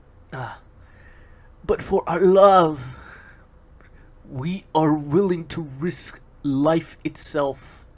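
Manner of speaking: lustful voice, "love" drawn out. Reading a script aloud, as the narrator: lustful voice. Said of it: "narrator's voice fills with lust".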